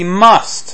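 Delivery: emphasis placed on must. Teaching listeners about reading the Bible, putting big emphasis on must. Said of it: "big emphasis on must".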